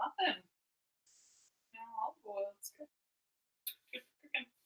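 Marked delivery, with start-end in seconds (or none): 1.7-4.5 soft, condescending, humoring tone. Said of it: "do you hear the condescension in her voice".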